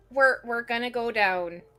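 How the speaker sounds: put-on loud Irish accent slipping into the speech. Voicing a character while moving the party on: Irish accent. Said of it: "Sorry, I went Irish again".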